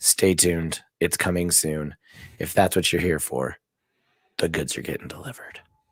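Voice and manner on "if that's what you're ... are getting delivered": smooth, sultry, seductive, sexy voice. Teasing a giveaway to live viewers, sexy-sounding delivery. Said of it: "I sound really sexy when I say it like that".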